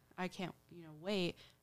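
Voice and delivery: ordinary talk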